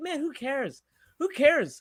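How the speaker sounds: soft, high, breezy, unbothered, dismissive tone. Responding to another speaker's angry rant in a carefree tone. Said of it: "in more of a tone that's a little bit more carefree".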